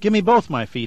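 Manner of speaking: firm, high, commanding tone. Charlie gives the old lady an order as his body forms again, ordering. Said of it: "ordered Charlie".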